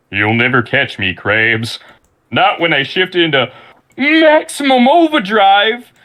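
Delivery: high, slow, swooping character voice. Channeling a cartoon character after being caught off guard: Plankton voice. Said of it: "in your Plankton voice".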